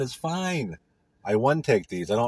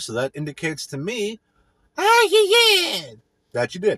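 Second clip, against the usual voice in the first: zany put-on voice, very high and loud; 9 semitones higher, 4 dB louder than usual. Podcast host thanking listeners for the last episode, in a crazy voice. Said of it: "That's what I just said in my crazy voice".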